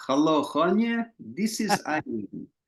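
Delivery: put-on slow, high Polish accent. Retelling a phone call about her life story rights, in Irene's delightfully Polish accented voice. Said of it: "this delightfully Polish accented voice".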